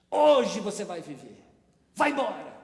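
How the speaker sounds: loud shouted delivery. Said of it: "E ele gritou".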